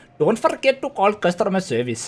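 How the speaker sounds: cartoon-style sing-song Indian accent. Chatting with a co-speaker about a favorite voice, doing the South Park Indian accent. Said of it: "that South Park Indian voice where it's like".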